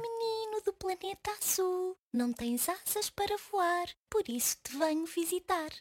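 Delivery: tiny, small, thin voice. Narrator reading a story, voicing a little star greeting the boy, thin little voice. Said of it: "Falou-me com uma voz fininha".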